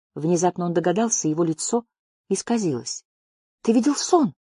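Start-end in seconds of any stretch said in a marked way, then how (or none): 3.7-4.4 pitched up, breathed out on a single breath. A narrator reads one character's question to another, breathed out. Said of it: "выдохнул он".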